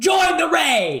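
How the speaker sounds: shrill, very high, loud hype yell. Telling chat to join the raid, yelling. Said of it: "sorry I yelled".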